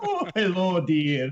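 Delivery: very high-pitched nanny-style voice. Teasing another speaker about a slipped accent: Mrs. Doubtfire voice. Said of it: "you became Missus Doubtfire for a second".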